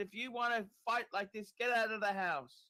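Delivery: put-on, high-pitched scolding yell. Retelling stopping the kids from fighting: retelling screaming at kids. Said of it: "I was screaming at the kids".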